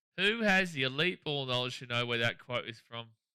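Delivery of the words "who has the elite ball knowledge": usual speaking voice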